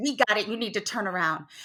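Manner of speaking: put-on furious tone, held in, quiet and enraged. Retelling telling a seat-kicking man to turn around, as an enraged retort. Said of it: "I was enraged".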